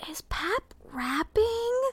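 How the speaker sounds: put-on very high, hushed child's half-whisper. Retelling what a four-year-old half-whispered to her mom during prayer: imitating Betty half-whispering. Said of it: "So she whispers to Kathleen".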